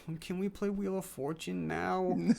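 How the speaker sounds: high, whiny, needy voice. Retelling what a guy said in a story, imitating a whiny voice. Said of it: "he's like all whiny".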